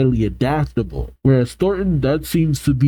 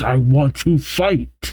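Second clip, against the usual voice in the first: put-on ominous, menacing voice, slower. Retelling a girl whose powers grow out of control, mock ominous voice. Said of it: "she says with an ominous voice".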